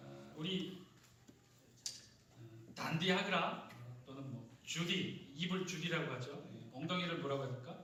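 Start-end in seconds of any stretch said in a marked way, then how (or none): 2.4-5.3 slow words in Gyeongsang dialect. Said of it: "이런 표현 쓰는 사람들 어디 사람들이에요".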